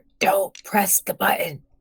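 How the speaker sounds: exaggerated, very loud, carrying stage whisper. A player's character warns the red shirt guy about the button: loud stage whisper. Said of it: "I say in a very loud stage whisper".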